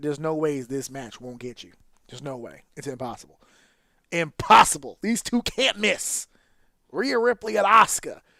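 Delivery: firm, confident, insistent, without doubt. Retelling what was told to a dude before a match: retelling words said in full confidence. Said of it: "I told him in full confidence".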